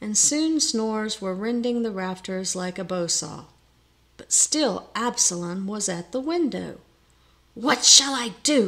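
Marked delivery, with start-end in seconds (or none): 7.5-8.7 words pushed out as a hiss. Allison speaks while Absalom is still at the window; hissed. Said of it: "hissed Allison".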